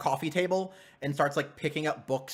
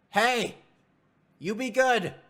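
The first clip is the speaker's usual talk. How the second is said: very drawn-out, slow, high yell upward; 8 semitones higher, 4 dB louder than usual. Voicing a character leaving the house, calling to a child upstairs: yelling up the stairs. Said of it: "he just yells up".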